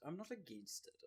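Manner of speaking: plummy upper-class British accent, very soft and high. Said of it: "You sounded very British and posh right there".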